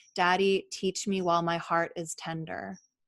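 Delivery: ordinary talk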